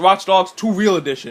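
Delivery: ordinary talk, nothing marked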